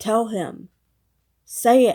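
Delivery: angry, yelled voice.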